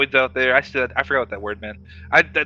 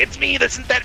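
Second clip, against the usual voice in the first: put-on silly, goofy, dumb voice, very high-pitched; 12 semitones higher than usual. Teasing a teammate by imitating the dumb voice they do: imitating a friend's dumb put-on voice.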